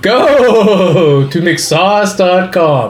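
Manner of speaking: eerie put-on ghostly voice, drawn-out "go". Doing the housekeeping announcements in a spooky haunted voice. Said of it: "In this haunted voice".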